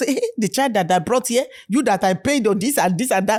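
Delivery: ordinary delivery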